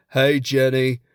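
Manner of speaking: put-on dumb-sounding Southern accent. Listing American accents, doing Forrest Gump's stupid southern accent. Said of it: "that kind of like a stupid southern accent".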